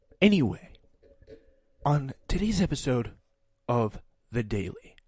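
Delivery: heavy stress on each word, followed by a pause. Mocking a podcast host's way of speaking: imitating Michael Barbaro's emphatic pauses. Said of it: "the words are, like, capitalized and emphasized and paused".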